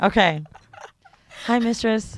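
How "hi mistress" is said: apologetic put-on voice, higher pitch. Acting out a scene at an ATM, addressing the mistress: role-playing an apologetic client. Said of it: "I'm in there".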